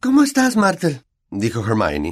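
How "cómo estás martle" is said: very high, forced, feigned cheerful tone. Hermione greets a sulky Martle, feigning a cheerful tone. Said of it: "fingiendo un tono animado".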